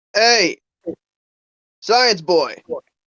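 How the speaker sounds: loud, high-pitched yell.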